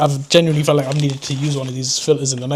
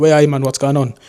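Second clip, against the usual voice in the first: completely Geordie accent, laid on thick; 3 dB louder than usual. Showing how their accent sometimes sounds: strong geordie accent. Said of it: "sometimes it can be completely Geordie and be like".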